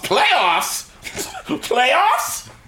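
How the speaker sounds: put-on disgusted scoff. Joking that nobody should ask about the playoffs, the speaker is imitating Jim Mora's disgust. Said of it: "He said that with so much disgust".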